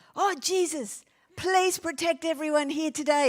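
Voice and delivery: panicked, very high, loud, drawn-out voice. Recalling a panic response while protecting the children, acting out praying very loudly. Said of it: "I was praying very loudly".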